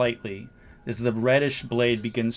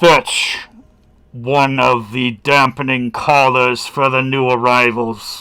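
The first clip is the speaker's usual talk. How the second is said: booming, reverberating call, much louder; 10 dB louder than usual. Voicing an unseen someone calling out through the chamber, reverberating voice. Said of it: "calling out in this reverberating voice".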